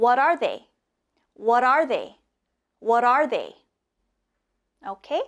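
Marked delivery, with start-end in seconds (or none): 0.0-3.6 fast, quick-fire repetition, three times in a row. Leading a group drill, the speaker repeats the question three times, fast. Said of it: "Let's do it fast three times".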